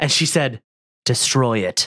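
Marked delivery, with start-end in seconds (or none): 1.1-1.9 put-on flat deadpan, expressionless, low. Retelling what a daughter said after making her first snowman: imitating a deadpan delivery. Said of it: "she looked me deadpan in the face".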